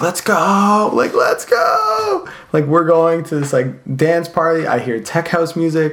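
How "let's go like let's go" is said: put-on very slow, stretched-out, swooping scream, pitched up. Retelling screaming while biking with the group to a dance party: retelling a scream. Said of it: "I was screaming like".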